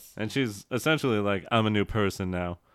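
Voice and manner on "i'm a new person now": ordinary delivery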